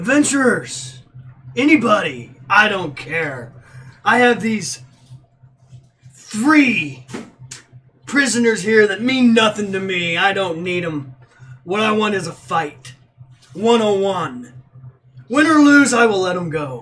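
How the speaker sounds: gruff growling voice, loud and slow. Narrating a scene, a voice calls to adventurers from the front gates, growly voice. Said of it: "Kind of a growly voice".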